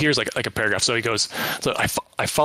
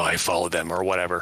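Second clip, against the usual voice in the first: super creepy put-on voice, much lower; 7 semitones lower than usual. Describing how a man will say the fact pattern, super creepy voice. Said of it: "he's going to be saying it super creepily".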